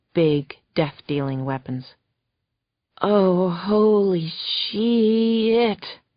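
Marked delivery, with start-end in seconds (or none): 3.0-5.8 groaned line, higher. Reading a story where Max sees armed men arrive: groaning. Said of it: "Max groaned".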